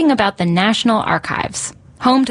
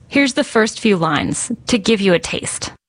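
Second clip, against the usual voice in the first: normal talking voice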